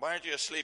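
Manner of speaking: loud, high-pitched shout. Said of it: "And he shouted up".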